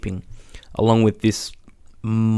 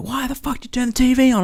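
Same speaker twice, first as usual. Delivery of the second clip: mock furious yell pitched very high. Recounting how she rolled over when the tv turned on, retelling an angry yell. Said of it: "she rolled over and yelled at me like".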